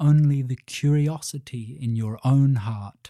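ordinary delivery

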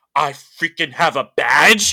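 loud, drawn-out excited screaming outburst. Speaker recounts their reaction to getting a link, retelling a scream. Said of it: "I literally just screamed going".

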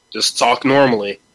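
ordinary delivery

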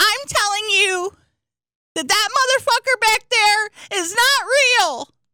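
very high, put-on female voice. Telling the others about a woman, impersonating her. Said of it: "This is my best impersonation of her".

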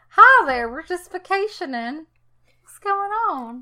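fake Southern American accent. Offering to play victims in a film, greeting in a put-on Southern accent. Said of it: "We can have Southern accents. ... Authentic Southern accents".

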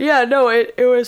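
talking through a yawn. Speaker talking about a book's fight scenes, yawning. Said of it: "sorry, I'm yawning".

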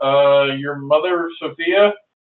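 plain reading voice

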